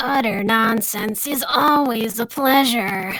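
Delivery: rasping female monster voice. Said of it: "that slug lady from Monsters, Inc".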